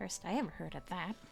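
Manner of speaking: very low, quiet, hushed, barely voiced grumbling mutter. A character reacts to an explanation about an old name, muttered under her breath. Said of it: "She mutters under her breath".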